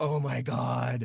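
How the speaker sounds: low, slow, devastated, crushed dismay. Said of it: "I was devastated".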